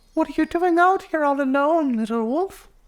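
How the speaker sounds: very high, sprite-like fairy voice. Narrator reading a fairy speaking to a lone little wolf, in a high fairy voice. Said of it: "spoke in a high voice".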